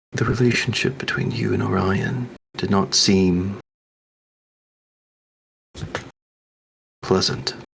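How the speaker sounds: voice dropped a little. Leaning in to stay hidden under the surrounding chatter; dropped voice. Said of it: "I'm gonna kind of drop my voice a little bit".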